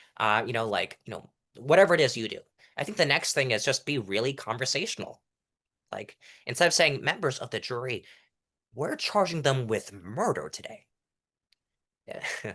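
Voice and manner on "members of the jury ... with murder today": serious, competent, formal voice. Contrasting mock trial delivery styles, the speaker first shows the serious mock trial voice. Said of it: "like the competent mock trial voice".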